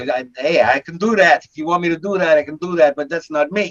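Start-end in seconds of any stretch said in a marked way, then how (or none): 0.4-2.9 put-on New York tough-guy accent. An actor told he sounds like he's from New York shows he can do it: New York accent. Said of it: "you sound like you're from, from you know, New York".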